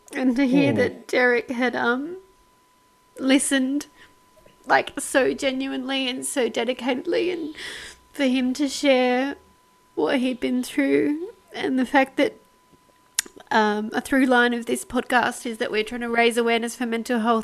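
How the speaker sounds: crying while talking. Podcast host on a listener sharing his story, crying while talking. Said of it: "I'm like crying over here".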